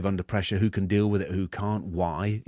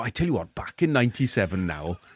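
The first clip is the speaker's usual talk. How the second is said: lilting Welsh way of talking. Imitating what his welsh mates always say, in a welsh accent. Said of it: "All your Welsh mates go".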